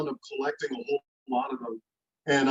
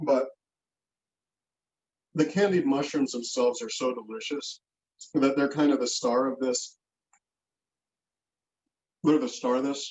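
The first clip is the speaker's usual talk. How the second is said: talking while chewing, mouth full. Host eating candied mushrooms while talking to the viewers: mouth full. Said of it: "I got to stop eating so I can talk to you guys".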